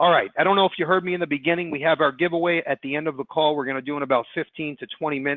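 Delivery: fast, rushed, announcing delivery. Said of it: "I know I'm talking fast".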